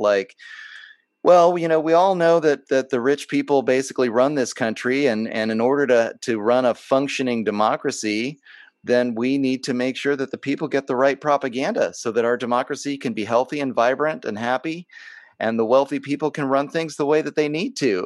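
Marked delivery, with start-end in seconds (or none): none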